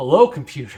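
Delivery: loud, clear, straight-faced delivery. Retelling a favorite movie scene, imitating Scotty. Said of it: "he's just like".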